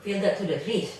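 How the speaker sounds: ordinary delivery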